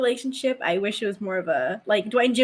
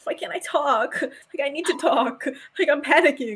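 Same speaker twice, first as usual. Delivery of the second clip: put-on sulky tone, pitched up; 5 semitones higher than usual. Retelling a scene from the back seat of a plane: imitating Rodney sulking. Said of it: "Ronnie's in the back, like, sulking".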